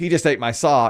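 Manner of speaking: plain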